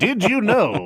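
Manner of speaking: put-on shrill, very high old-timey game-show announcer voice. Showing the other speaker how a fact should be asked, old-timey game show announcer voice. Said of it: "in like an old timey game show announcer voice".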